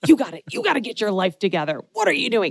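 put-on, playfully stern, fake angry tone. Retelling how he pretended to scold the baby, pretend mad. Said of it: "pretend to be really mad at him".

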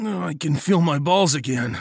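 high, pained groaning. Shivering with the others, the narrator answers Nagel, groaning. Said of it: "I groaned".

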